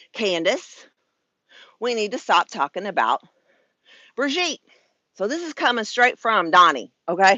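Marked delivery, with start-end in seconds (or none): 0.1-4.6 hesitant, roundabout, hemming and hawing delivery. Retelling a phone call from the president: Trump's tone. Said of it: "in his tone".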